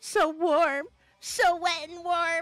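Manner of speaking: crazed, unhinged maniacal voice, pitched high. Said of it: "here comes my maniacal voice".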